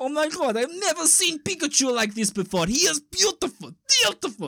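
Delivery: high, loud fake Russian accent. Retelling a story, voicing what a russian man said, put-on russian accent. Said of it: "this Russian guy goes".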